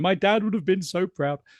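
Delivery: high, mock tearful sobbing. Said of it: "ideally I'm there crying".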